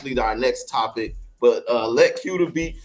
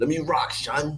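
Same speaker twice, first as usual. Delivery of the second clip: put-on Brooklyn street-talk accent; 4 dB quieter than usual. Repeating a cousin's words to the other speaker, in a put-on brooklyn accent. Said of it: "I said that in your Brooklyn accent too".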